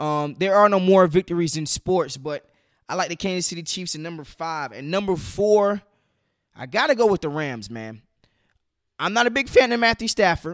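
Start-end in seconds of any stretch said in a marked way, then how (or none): 9.0-10.5 slight voice break, cracking upward mid-line. Ranking football teams, voice cracking a little. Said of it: "Voice just cracked a little bit".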